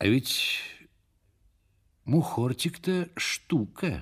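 half-voiced, slow, quiet undertone. Blazhenny remarks to his companion, in an undertone. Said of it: "вполголоса отнесся Блаженный".

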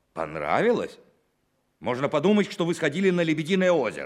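heated, angry, loud, shrill shouting. Replying to a report that a meeting went well, shouting. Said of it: "не кричите на меня".

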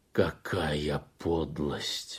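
hissed through gritted teeth. Reading a story, the collective farm chairman speaks through clenched teeth. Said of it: "процедил сквозь стиснутые зубы".

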